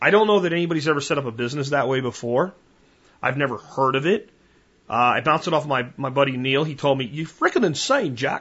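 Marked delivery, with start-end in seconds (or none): 7.0-8.4 put-on British accent, best attempt. Quoting his buddy Neil's reaction to him, in a British accent. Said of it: "That's the best British accent I can do".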